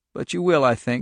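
plain

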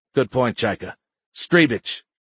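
ordinary delivery

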